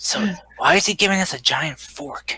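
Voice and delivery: leaning-in, conspiratorial stage whisper. Playing a character who leans in to ask a companion: half-whispering in character. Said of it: "lean into Livia and whisper".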